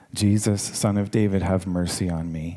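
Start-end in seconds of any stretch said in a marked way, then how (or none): none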